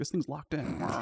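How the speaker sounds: muttering under breath. Voicing a character stuck at a locked pedestal: cursing under her breath. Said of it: "she's kinda cursing under her breath".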